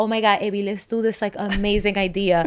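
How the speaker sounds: put-on Latin accent. Quoting a photographer friend suggesting an idea, in a put-on Latin accent. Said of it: "Because you did the Latin accent".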